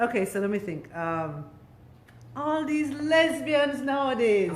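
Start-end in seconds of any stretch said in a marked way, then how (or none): 2.4-4.5 upscale Jamaican way of talking. Trying out an uptown Kingston accent after another speaker's teasing: imitating an uptown Kingston accent. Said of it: "I wanna try".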